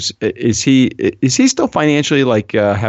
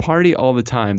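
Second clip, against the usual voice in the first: ordinary talk, nothing marked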